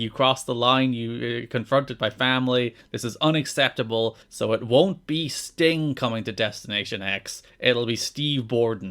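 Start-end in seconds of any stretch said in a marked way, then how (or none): none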